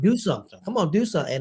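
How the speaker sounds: restless, impatient heckling yell. Retelling a wrestling show where a first-time attendee yelled, retelling a yell. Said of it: "he's yelling".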